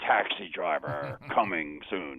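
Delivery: very deep, slow movie-trailer announcer voice. Retelling a movie trailer's ending line: imitating a deep trailer voice. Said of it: "in this deep voice".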